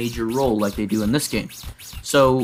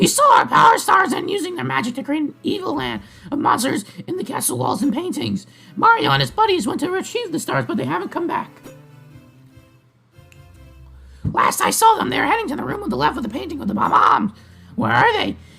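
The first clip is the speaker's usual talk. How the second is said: very high, sinister evil character voice; 3 dB louder than usual. Voicing a Toad's game dialogue to Yoshi, in an evil Toad voice. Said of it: "ready for the evil Toad voice".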